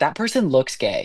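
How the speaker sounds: ordinary delivery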